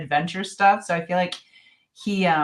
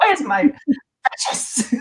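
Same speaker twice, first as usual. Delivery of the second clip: pitched-up creature voice; 8 semitones higher, 4 dB louder than usual. Naming the Lord of the Rings character the other speaker sounds like, in a Gollum voice.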